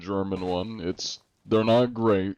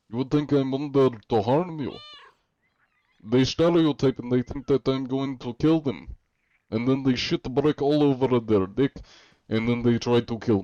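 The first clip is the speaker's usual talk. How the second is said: fake, put-on Russian accent; 4 semitones higher than usual. Answering a request to reveal the real voice: put-on Russian accent. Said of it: "I'm gonna stop with the Russian accent".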